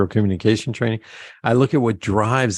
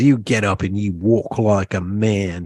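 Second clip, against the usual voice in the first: put-on Australian accent. Speaker quotes a man's wife scolding him for crawling to bed; Australian accent. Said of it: "They're Australian, so I have to do the accent".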